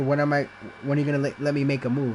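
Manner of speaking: ordinary delivery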